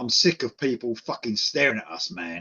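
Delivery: low, deep, dropped bass-register voice. Speaker retells the man who stopped the music to address the crowd: imitating his deep voice. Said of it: "in his deep voice".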